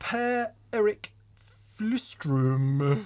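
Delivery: goofy, silly, high, put-on Swedish-accented voice. Reading out a name from Sweden, in a silly Swedish Chef voice. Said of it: "needed to be said with such a silly voice".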